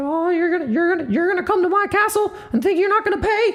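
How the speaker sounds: very high, squeaky cartoon-style voice. Admitting the impression is terrible right now, doing a Mickey Mouse voice. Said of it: "my Mickey voice is terrible right now. It's like".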